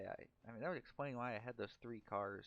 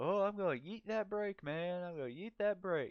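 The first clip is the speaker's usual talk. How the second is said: put-on very loud, high older Southern man's accent; 9 semitones higher, 8 dB louder than usual. Retelling an older man's answer to a question, in an old southern accent. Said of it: "this older guy with that old southern accent".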